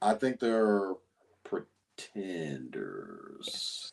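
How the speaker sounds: slow, soft, dragged-out, unsure, not confident.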